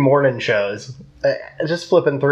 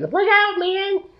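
put-on high-pitched gnome voice. Imagining gnomes yelling as they fell tall plants, high-pitched gnome voice. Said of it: "you even do gnome voice".

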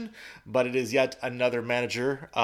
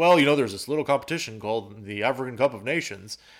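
sarcastic delivery. Retelling a coach's press conference answer to a reporter: imitating Klopp speaking sarcastically. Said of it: "he was saying it sarcastically".

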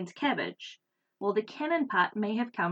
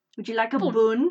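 loud, put-on Scottish old woman accent; 8 dB louder than usual. Speaker tries to sound like their great-granny: imitating great-granny's Scottish accent. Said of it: "to sound like my great-granny".

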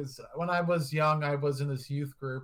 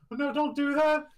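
put-on tearful, crying voice, higher pitched; 12 semitones higher, 4 dB louder than usual. Retelling a former priest's talk at a panel: imitating someone crying. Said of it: "he was, like, crying on".

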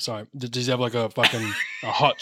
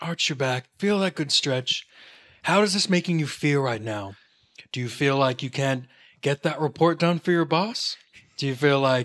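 California-style voice; 3 semitones higher than usual. Imitating a man talking people through their stretching, californian accent. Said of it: "he's a Californian accent".

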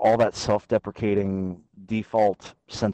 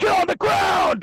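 very high intense yelling; 4 dB louder than usual. Describing the intense character from the skits, demonstrating his intense yelling. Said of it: "he's the really intense one that's like yelling a lot".

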